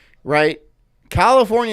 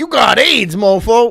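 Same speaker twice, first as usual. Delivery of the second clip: loud, high-pitched, blunt holler; 7 semitones higher, 6 dB louder than usual. Joking about a made-up doctor wearing a gold necklace: Doctor T voice. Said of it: "He's like".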